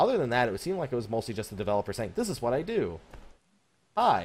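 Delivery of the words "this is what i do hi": ordinary delivery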